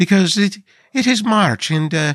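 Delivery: put-on high-pitched, horrible Irish accent. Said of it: "me horrible Irish accent".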